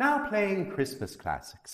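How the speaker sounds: soft, sing-song British assistant announcement voice. Speaker quotes the desk assistant answering a request for Christmas music, British voice assistant imitation. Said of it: "I use the British voice for my little lady".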